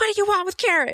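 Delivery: sharp, shrill, very high shouted yell. Playing Amelia in the game, demanding what the creatures want: yelling. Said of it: "It's just yelling at him".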